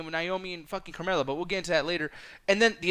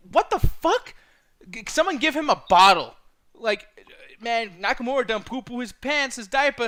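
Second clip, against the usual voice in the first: plain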